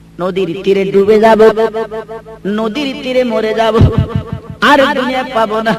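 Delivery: ordinary delivery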